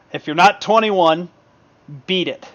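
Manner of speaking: snorting dismissively. Voicing a character who looks at the player and snorts: snorting dismissively. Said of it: "he snorts".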